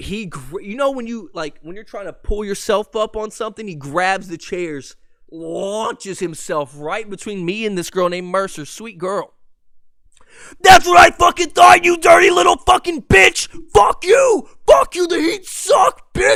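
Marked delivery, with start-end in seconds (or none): 10.6-16.4 very loud, very high, shrill, furious screaming. Retelling a drunk fan's rant at a game: imitating a fan screaming. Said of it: "dead ass just screaming at a sixteen-year-old".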